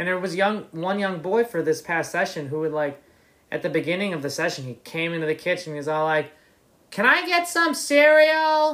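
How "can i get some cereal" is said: put-on very high, very slow, drawn-out hollering. A camp kitchen worker retells how a young boy asked in the kitchen, imitating him yelling. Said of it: "Or he just yelled".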